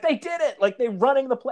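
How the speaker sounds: screaming, high-pitched. Retelling watching the team run the play: retelling own scream. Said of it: "I'm screaming, like".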